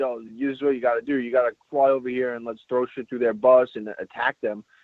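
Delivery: normal talking voice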